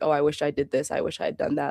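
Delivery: plain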